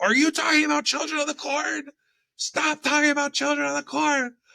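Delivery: mock, very high, shrill yelled-out outburst. Retelling what a partner yelled out from across the pool, retelling a yell. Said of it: "yelled out".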